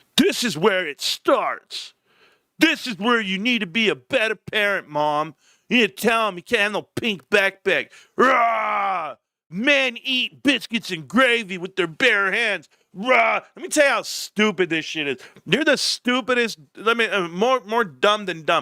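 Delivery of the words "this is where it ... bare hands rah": mocking parody voice, higher. Reading out bigoted comments under a video: mocking bigoted commenters. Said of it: "these bigots".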